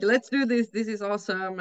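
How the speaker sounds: plain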